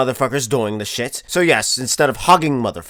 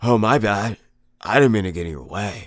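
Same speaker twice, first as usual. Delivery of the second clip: put-on fuckboy voice, much lower, quieter; 4 semitones lower, 3 dB quieter than usual. Retelling playing dumb after a woman bumps into him again: put-on fuckboy tone. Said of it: "With the fuckboy tone".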